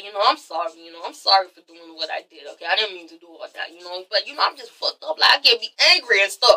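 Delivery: run-on, rambling, messy apologetic delivery. Recapping an episode, acting out Tommy's apology: imitating Tommy apologizing. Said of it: "she's like".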